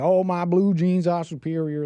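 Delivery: exaggerated, high, mocking put-on voice. Making fun of a jeans ad in a mocking put-on honky voice. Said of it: "I'm gonna have to do this like honky voice".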